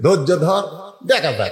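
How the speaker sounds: ordinary delivery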